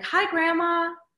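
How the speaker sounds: voice pitched very high. Showing how they talk to their grandma: high-pitched voice. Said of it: "I'm pitched way the hell up".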